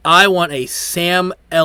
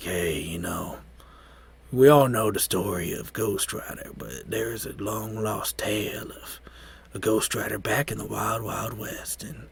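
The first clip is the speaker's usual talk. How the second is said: smooth put-on narrator voice, lower and quieter; 5 semitones lower, 12 dB quieter than usual. Imagining Sam Elliott narrating a Ghost Rider prequel: Sam Elliott voice. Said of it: "that smooth voice of Sam Elliott doing the narration".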